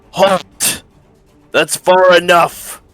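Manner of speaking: orc shouting. Narrating a scene where one of the orcs yells: orc yelling in Orcish. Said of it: "in Orcish yells".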